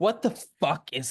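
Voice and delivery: mock vitriolic anger, furious ranting. Acting out a contestant's diary-room confessional; mock-angry rant. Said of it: "that seems super like vitriolic and angry".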